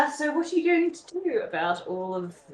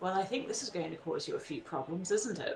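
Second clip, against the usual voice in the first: very quiet, low-voiced murmur; 6 semitones lower, 10 dB quieter than usual. Leaning over someone reading a letter, one person speaks to her in a low voice. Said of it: "says to her in a low voice".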